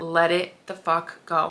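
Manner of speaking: strong emphasis on the word LET.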